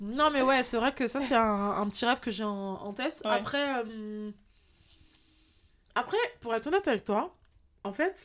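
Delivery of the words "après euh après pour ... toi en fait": talking with mouth full, slower. Guest keeps explaining her plans while eating dates, talking with mouth full. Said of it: "je parle la bouche pleine".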